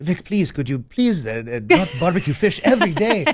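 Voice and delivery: put-on Middle Eastern accent. Quoting the father speaking to the mother, in his Middle Eastern accent. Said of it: "my dad had this like Middle Eastern accent".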